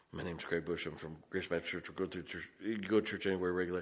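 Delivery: nervous, jittery, fast, low rushed mumble. Demonstrating how not to introduce yourself to strangers when nervous, nervous quiet mumble. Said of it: "talk so quietly that nobody hears".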